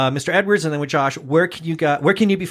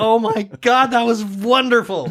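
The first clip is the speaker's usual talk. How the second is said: laughing and crying at once, pitched up; 6 semitones higher than usual. Reacting to hearing the other speaker perform a reading, laughing and crying at once. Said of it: "I'm laughing and I'm crying at the same time".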